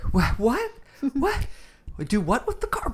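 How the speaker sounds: very high voice, stunned disbelief and baffled confusion. Voicing the confused wife's expression in a movie scene: imitating bafflement. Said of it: "this expression of, like".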